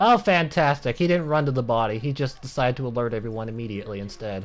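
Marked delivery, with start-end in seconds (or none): 0.0-1.0 sarcastic, sardonic, ironic, pitched-up tone. Playing a game as the enemy finds the body, sarcastic. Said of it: "I'm being sarcastic when saying that".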